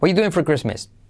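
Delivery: fast, quick, smooth run-together delivery. Teaching an English question, showing it said quickly: quick, smooth run-together delivery. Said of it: "Al hacerlo rápido".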